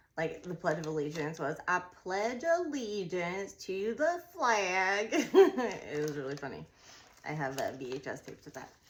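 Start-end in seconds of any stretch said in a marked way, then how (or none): 1.7-5.1 very Southern, slow, every word over-enunciated. Retelling how you spoke as a little kid, in an over-enunciated super Southern accent. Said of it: "I sound like I had a super uh, southern accent".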